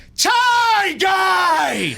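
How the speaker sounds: loudest possible, very high, drawn-out yell. Showing how loudly he yelled out the window: imitating his own loud yell. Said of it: "I was going like this".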